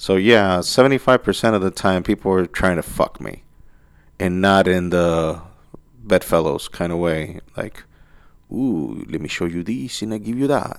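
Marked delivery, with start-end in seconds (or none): 8.5-10.8 put-on French accent. Joking about people who try to seduce: put-on french accent. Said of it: "French has to be always the go-to accent".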